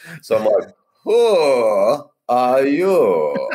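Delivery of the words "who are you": put-on, swooping Russian accent, drawn-out "who". Retelling greeting passers-by at a party, the speaker uses a russian accent. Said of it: "The Russian accent".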